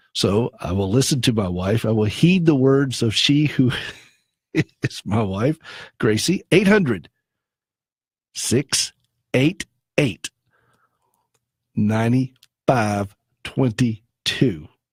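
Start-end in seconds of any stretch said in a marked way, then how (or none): 6.5-14.6 very slow, deliberate, each digit drawn out separately. Reading out a number slowly, as the speaker's wife asked: said very slowly. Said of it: "I'm going to say it very slowly".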